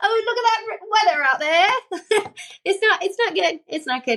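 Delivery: put-on British accent, very high pitch. Asked by the other speaker to talk weather: British accent. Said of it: "tell it to me in a British accent".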